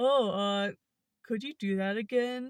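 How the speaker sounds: goofy, dopey put-on voice. Telling of a stranger on a bike, the speaker imitates him in a derpy voice. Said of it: "he just says in the most derpy voice".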